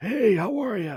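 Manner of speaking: hoarse voice pushed very high. Retelling meeting Terry Funk on the first night: hoarse Terry Funk voice. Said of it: "he has that hoarse kind of voice".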